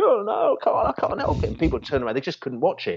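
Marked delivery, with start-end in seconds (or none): 0.0-1.5 very high, tearful, crying, pleading wail. Retelling a girl in the crowd before the penalty, imitating a girl crying. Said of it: "she's like crying, going".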